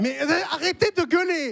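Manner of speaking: high-pitched shout broken with laughter.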